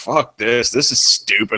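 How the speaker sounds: put-on dismissive grumbling. Retelling how Cody acted in the jury house: Cody's fed-up attitude. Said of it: "he just sat there in the jury house like".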